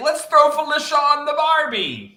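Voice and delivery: put-on Australian accent on every word, loud and high. Quoting a contestant, imitating an australian accent. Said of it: "That was my accent".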